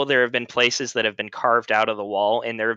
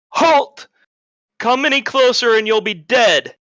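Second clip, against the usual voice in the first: very high, loud, self-assured, confident tone; 11 semitones higher, 7 dB louder than usual. Voicing an unseen figure who warns the party to halt: confident voice.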